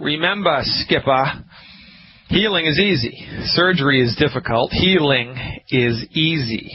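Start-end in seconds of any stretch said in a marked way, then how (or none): 0.0-1.4 natural local Boston accent coming out. Show host addressing a caller named skipper, boston accent coming through. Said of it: "here's my Boston accent coming out".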